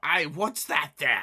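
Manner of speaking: high, very loud goblin voice. Voicing a goblin who hears something nearby: goblin voice. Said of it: "you hear one of these goblins go".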